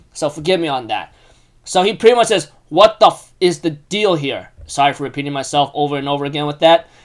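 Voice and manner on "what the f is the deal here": put-on angry character voice. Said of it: "how people would be really angry".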